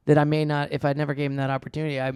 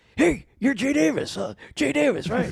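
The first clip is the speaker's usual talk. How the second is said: put-on overexcited man voice, higher; 10 semitones higher than usual. Retelling meeting a fan at an audition: imitating an overly excited guy. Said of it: "overly excited to meet".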